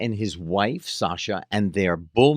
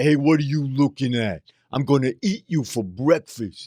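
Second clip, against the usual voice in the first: put-on street talk, a touch higher; 5 semitones higher than usual. Retelling people watching them film in the street: imitating Sly Stallone's way of talking. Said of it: "who talked like this".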